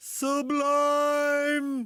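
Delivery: very high English commentator voice, "sublime" stretched out. Retelling how an English announcer reacts to a goal: imitating English announcer's goal call. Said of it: "it's an English guy, and there's a goal, and he goes".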